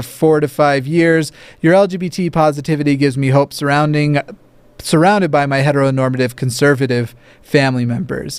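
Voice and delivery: ordinary talk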